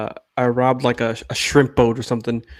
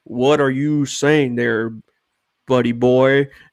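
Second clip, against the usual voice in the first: lawman voice in a Texas manner. Retelling a desert story, voicing the Texas Ranger: Texas Ranger voice. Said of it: "you know Texas Ranger".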